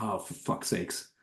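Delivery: acted, deflated whisper, all air gone, resigned. Retelling the dad giving up after yelling at his own child, imitating deflated resignation. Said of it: "completely just deflates and is like".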